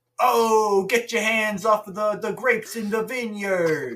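loud, shrill, high, booming put-on Bronx Italian accent. Trading bits with another speaker, doing the Italian from the Bronx voice. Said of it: "the Italian from the Bronx".

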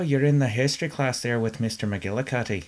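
put-on Irish accent through the whole line. Showing another speaker how a line sounds: Irish accent. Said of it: "say McGillicuddy with an Irish accent".

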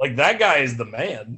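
ordinary delivery

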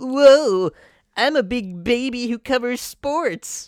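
shrill, booming, high, slow put-on nerdy voice. Doing an impression of the other speaker's impression of Jim Rome: nerdy Jim Rome impression. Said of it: "I'm going to do my impression of your impression of Jim Rome".

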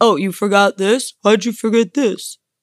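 needling, reproachful, incredulous complaining tone. Retelling how her partner reacts to forgotten things: imitating her partner's complaint. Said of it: "That's me impersonating you".

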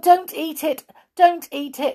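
pretend-upset cry, very high. Peter cries out to the wizard at once, pretending to be upset. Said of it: "cried Peter at once, pretending to be most upset".

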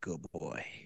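quiet, low-pitched whisper.

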